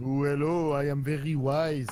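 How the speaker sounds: loud mock French ghost voice.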